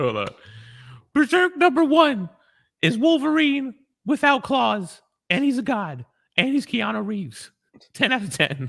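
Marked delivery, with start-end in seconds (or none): 1.1-8.7 very high, swooping put-on cartoon mouse voice. Asked by his co-host, reviewing Berserk issue one in a Mickey Mouse impression. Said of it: "in your best Mickey Mouse impression".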